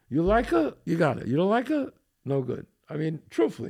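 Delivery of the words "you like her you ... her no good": usual speaking voice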